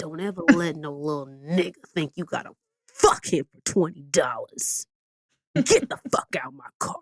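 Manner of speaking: low-pitched, theatrical, dramatic dad voice. Speaker retelling a life lesson from their dad, doing his voice. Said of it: "so I have to do his voice".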